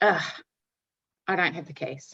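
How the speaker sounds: mock-exasperated, fed-up groaned delivery. Retelling what a man at the club said, imitating an exasperated groan. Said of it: "And he goes".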